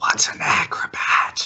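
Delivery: whispered. Asking another character a question in a whisper. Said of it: "Chlamydia whispers to Zoe".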